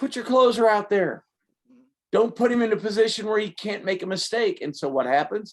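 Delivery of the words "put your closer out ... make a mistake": acted-out loud yelling and screaming. Retelling a partner yelling at a baseball game on TV: imitating someone screaming at the TV. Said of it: "he's screaming at the T V".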